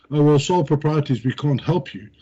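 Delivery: ordinary talk, nothing marked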